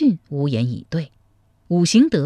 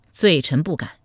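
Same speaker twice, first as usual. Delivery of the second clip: usual speaking voice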